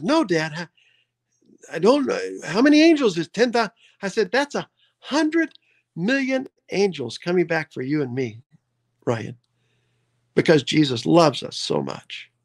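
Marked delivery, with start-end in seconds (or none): 0.0-3.7 mock eager little boy, excited rising sing-song. A father retells his six-year-old son's reply, imitating Ryan's excited voice. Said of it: "with excitement in his voice".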